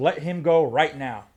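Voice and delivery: slow, hostile, forceful, aggressive delivery. Speaker retells what a man ordered him to do: retelling an aggressive order. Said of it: "with an aggressive voice".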